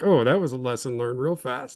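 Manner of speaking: ordinary talk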